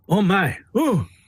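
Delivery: mock gasping, flustered and all worked up. Retelling a woman reacting at the press podium, imitating someone getting worked up. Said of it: "she's getting all worked up".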